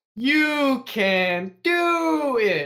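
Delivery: very high, very slow, drawn-out, dripping sarcasm. Showing how to say a line to a stressed coworker: mock sarcastic encouragement. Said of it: "in the most fucking sarcastic way possible".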